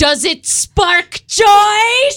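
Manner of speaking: very high, very loud scream, "joy" drawn out. Acting out Marie Kondo atop a bonfire before her followers: mock screaming as Marie Kondo. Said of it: "she screams to her followers".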